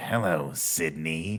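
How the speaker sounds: deep put-on voice. Retelling a movie scene, doing the villain's phone voice: Ghostface voice. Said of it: "Your Ghostface impression is, like, shockingly good".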